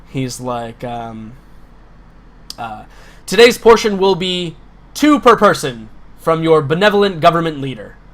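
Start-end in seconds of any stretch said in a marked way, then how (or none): 3.3-7.9 loud bellowing shout through a loudspeaker. An officer on a soapbox announces to the crowd through a loudspeaker, shouting to the crowd. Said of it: "he's like shouting to the crowd".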